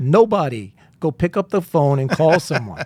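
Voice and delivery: blunt delivery in a put-on New Jersey accent. Retelling what Jim said in the hall early on at the firm, Jim's New Jersey accent. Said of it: "in his New Jersey accent".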